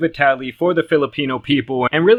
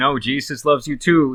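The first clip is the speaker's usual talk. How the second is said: ordinary delivery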